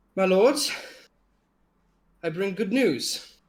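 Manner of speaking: weary breathless voice. The game master voices Roland coming up to the group, tired and panting. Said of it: "a very tired and exhausted and a little bit panting Roland".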